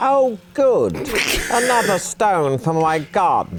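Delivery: very high, loud, squeaky character voice. A game narrator voices a figure speaking from behind a statue, in a high-pitched voice. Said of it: "In a high-pitched voice".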